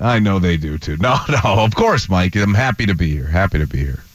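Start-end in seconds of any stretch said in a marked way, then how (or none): 3.3-4.0 low, condescending, smug radio-host voice. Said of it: "mastered the condescending radio voice".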